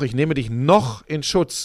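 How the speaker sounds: noch stressed and said slowly.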